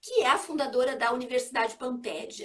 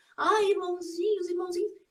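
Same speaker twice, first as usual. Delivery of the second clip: honeyed, cloying, pitched-up put-on sweet voice; 6 semitones higher than usual. Mocking a hypocrite entering a spiritist house, speaker does a put-on syrupy sweet voice. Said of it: "fazer uma voz melosa".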